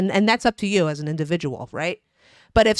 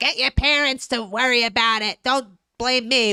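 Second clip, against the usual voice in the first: put-on yelling, delivered mildly; 4 semitones higher than usual. Retelling how a star answered critics, imitating someone yelling. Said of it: "her yelling at people like".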